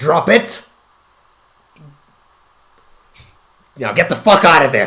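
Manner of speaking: grave, no-nonsense, dead serious commanding tone. Narrating a game scene, the narrator voices the Duke of Finances, dead serious. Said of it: "with the most serious voice you've seen him speak".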